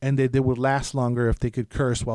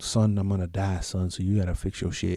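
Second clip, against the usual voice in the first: deep, low lion-like voiceover; 6 semitones lower, 4 dB quieter than usual. Describing a character with Mufasa vibes, quoting him to his son: Mufasa impression. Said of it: "That's my Mufasa".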